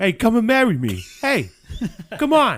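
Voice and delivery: very high, very loud South Boston accent. Imitating a woman proposing marriage: put-on Southie Boston accent. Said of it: "like, Southie Boston".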